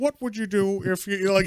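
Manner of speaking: put-on high-pitched, loose, almost-Canadian accent. Describing the animated show's introduction, doing a Todd McFarlane impression. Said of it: "He's got his weird Canadian almost accent".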